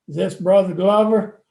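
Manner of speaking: very loud, broad Texas Southern drawl. Recounting a phone call from a Texas preacher, imitating his Texas Southern drawl. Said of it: "he calls me in this Texas Southern drawl".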